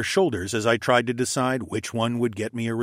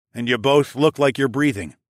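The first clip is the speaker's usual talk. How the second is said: plain reading voice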